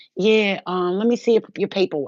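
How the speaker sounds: loud, attitude-filled tone. Retelling what the guy at the DMV said: imitating someone with an attitude. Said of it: "with an attitude".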